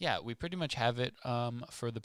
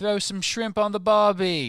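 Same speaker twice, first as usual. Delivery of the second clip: bad fake Australian accent, very high and loud; 9 semitones higher, 14 dB louder than usual. Hosts opening their show A Muggle's Perspective, doing a weak put-on Australian accent. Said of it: "My Australian is weak".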